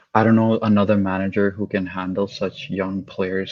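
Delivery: normal talking voice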